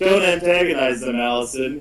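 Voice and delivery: ordinary talk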